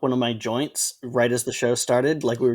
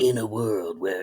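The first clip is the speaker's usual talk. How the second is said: put-on deep movie-trailer voiceover voice; 4 semitones lower, 4 dB quieter than usual. Chatting about voice impressions, the speaker tries the movie-trailer voiceover voice. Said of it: "the movie trailer voiceover guy".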